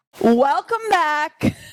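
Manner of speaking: shouting. Opening the show loudly beside a co-host: yelling. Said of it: "now my eardrums are broken".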